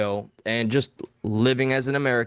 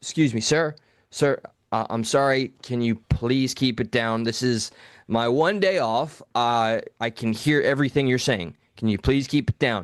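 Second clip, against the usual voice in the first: put-on polite, nice pleading tone. Retelling how he asked a loud moviegoer to be quiet: imitating own polite request. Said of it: "Did you say it just like that? Like, kinda nicely?".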